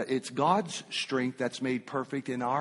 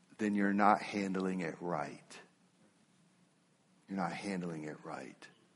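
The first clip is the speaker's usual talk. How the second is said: said very tenderly and gently; 6 semitones lower, 7 dB quieter than usual. A pastor answers someone who says they are persecuted and miserable, very tenderly. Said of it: "I say it very tenderly".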